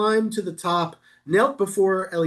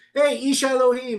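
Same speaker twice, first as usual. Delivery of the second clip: mocking, scornful, pitched-up jeering tone; 5 semitones higher than usual. Retelling how the king addresses the prophet: imitating a mocking king. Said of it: "He's mocking him".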